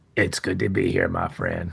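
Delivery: deep, creaky voice that swoops low. Greeting the host on joining the show: Morgan Freeman voice. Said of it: "Not Morgan Freeman".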